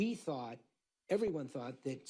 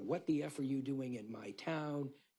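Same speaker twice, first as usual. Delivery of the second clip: ordinary talk, nothing marked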